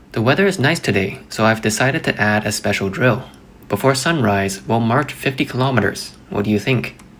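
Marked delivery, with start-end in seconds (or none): none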